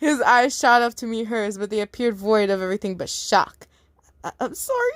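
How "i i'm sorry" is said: squeaky, very high voice. A narrator reads a shocked man's apology as he squeaks it out. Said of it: "He squeaked out".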